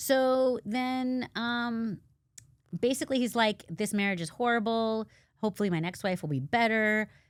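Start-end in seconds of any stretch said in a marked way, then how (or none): none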